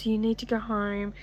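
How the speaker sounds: soft, sweet, condescending talking-down tone.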